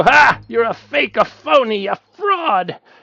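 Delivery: aggressive put-on talk show host voice. Retelling how a talk show host confronted a caller: imitating Bob Grant aggressively. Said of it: "being aggressive to anybody".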